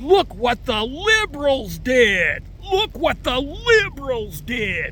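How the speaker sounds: high, slow, exaggerated mock scream.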